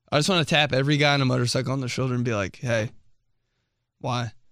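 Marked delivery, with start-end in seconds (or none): 2.5-4.3 put-on deadpan, dead serious, quieter. Acting out tapping a motorcyclist on the shoulder, mock deadpan and dead serious. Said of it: "Dead serious in the deadpan face".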